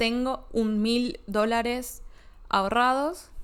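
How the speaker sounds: said the wrong way, slowly.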